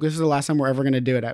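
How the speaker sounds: ordinary talk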